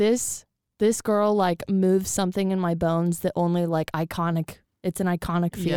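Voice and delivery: ordinary talk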